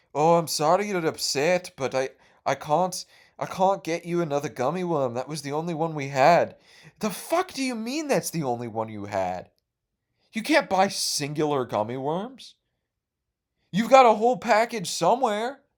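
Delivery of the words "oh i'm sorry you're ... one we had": put-on European accent. Retelling a counselor's reply to their complaint, imitating a European accent. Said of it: "random European accent lady".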